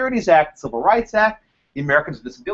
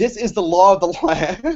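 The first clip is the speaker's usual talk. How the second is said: slow delivery, laughing through the whole line. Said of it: "I can't even say without laughing".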